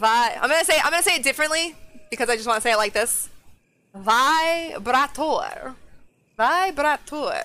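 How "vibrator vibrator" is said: put-on fancy accent. Saying a word differently to make it sound fancy, in a fancy put-on accent. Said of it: "If you say it with an accent, it sounds fancy".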